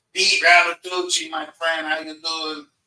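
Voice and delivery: put-on New York Italian accent. Speaker acts out someone greeting a friend: New York Italian accent. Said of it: "I'm using my New York Italian".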